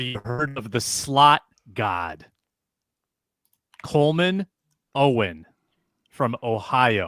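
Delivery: speaking slowly and clearly with deliberate enunciation. On a rough call, speaking so people can hear, speaking slowly and clearly. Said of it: "I'm going to speak slowly and clearly".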